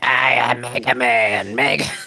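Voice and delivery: slow, drawn-out smoker's cartoon voice. Recalling an old cartoon to the others, imitating Mega Man: Mega Man smoker voice. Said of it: "when he talked like a smoker".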